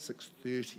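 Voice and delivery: hushed, soft, barely audible quiet voice.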